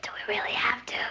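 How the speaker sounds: soft, unvoiced whisper. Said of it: "What are you whispering for?".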